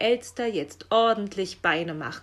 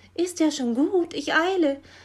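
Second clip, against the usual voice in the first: high, meek, audibly intimidated small voice; 8 semitones higher, 3 dB louder than usual. The magpie answers right after being scolded: audibly intimidated. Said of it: "hörbar eingeschüchtert".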